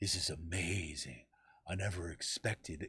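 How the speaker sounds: low, slow, dramatic spoken-word delivery. Retelling how he talked about zero gravity, like a spoken word album, in a classic William Shatner voice. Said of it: "talking in that classic like William Shatner voice".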